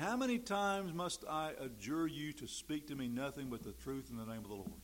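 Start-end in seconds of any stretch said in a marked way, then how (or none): none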